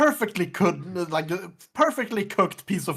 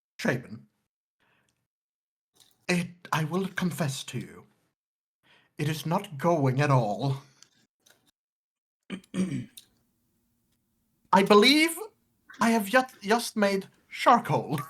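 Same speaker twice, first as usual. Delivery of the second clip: very low, secretive, confiding conspiratorial voice. In a roleplay scene, Wilbur leans in toward Shaven, low conspiratorial voice. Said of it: "in a very like low conspiratorial voice".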